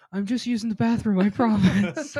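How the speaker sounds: very high-pitched, shrill, loud hollered yell. Retelling what a child yelled from behind a tree: imitating someone yelling. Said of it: "she yells at me".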